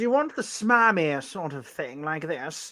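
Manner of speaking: put-on smarmy, smug British voice. Asked to do it in a British accent, offering one version, smarmy British accent. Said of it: "you have to do it in an in a British accent".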